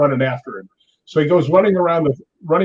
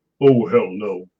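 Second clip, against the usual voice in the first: very deep, low-pitched voice; 6 semitones lower than usual. Retelling a co-star's refusal to go ghost hunting: Tony Todd voice. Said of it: "you know that deep voice he's got?".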